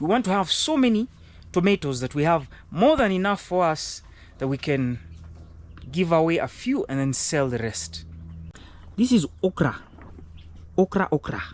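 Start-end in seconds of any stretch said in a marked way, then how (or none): 9.0-11.4 put-on Nigerian English accent. Showing the field in a video, naming a plant in a Nigerian accent. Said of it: "I'm using a Nigerian accent".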